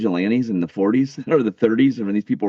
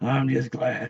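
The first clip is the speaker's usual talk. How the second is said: hushed, put-on old smoker's voice; 3 semitones higher, 6 dB quieter than usual. Voicing a sock puppet from a clip they are watching: old smoker's voice. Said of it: "Talking in this old smoker's voice".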